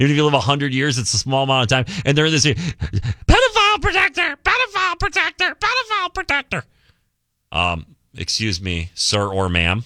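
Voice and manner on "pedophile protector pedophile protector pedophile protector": shrill, very high, swooping screaming. Speaker mimics a No Kings protester, screaming unisex voice. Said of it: "That was a unisex voice that I did right there".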